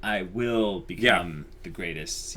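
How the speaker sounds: usual speaking voice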